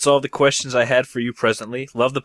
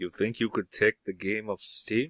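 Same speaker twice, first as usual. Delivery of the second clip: fake Russian accent, lower and quieter; 3 semitones lower, 11 dB quieter than usual. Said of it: "where's your Russian accent?".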